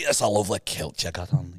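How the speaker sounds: Scottish accent. Showing another line for the other speaker to copy: scottish accent. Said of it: "Scottish accent".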